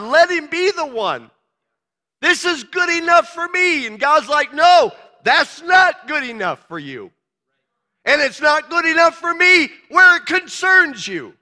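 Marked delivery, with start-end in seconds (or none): 0.0-3.9 earnest, begging, imploring, pleading voice. Speaker retells a story where a man begs God, acting out begging God. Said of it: "begged God".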